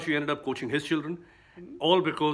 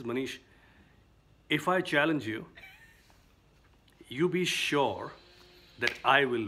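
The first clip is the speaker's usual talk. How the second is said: steady, grave voice. Retelling a friend's calm challenge: imitating Caroline speaking very seriously. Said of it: "she says very seriously".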